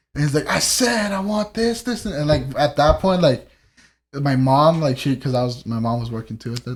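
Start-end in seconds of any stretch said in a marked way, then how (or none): 0.5-2.1 high, slow, insistent mock-angry yell. Retelling a man yelling his order: imitating someone yelling. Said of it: "he started yelling".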